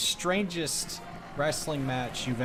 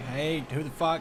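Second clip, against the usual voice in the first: ordinary delivery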